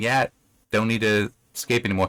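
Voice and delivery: ordinary talk, nothing marked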